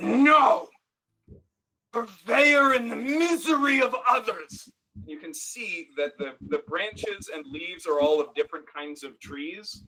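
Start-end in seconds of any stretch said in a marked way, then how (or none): 0.0-4.7 slow, booming, furious shout. Voicing a voice that explodes in a player's mind: voice exploding in the mind. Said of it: "a voice explode in your mind that says".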